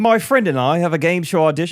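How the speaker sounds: put-on British accent. Reading someone's submitted question aloud, in a British accent. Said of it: "I'll read it in a British accent".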